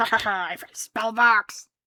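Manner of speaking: acted-out slow, gleeful cackle. Describing a player character who finds a spell book: cackling to oneself. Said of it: "cackling to yourself".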